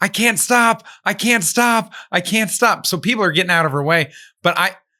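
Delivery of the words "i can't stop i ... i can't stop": mock high-pitched screaming, stretched out and drawn out. Telling about a girl going seventy on the hardest run, imitating someone screaming. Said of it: "she's screaming".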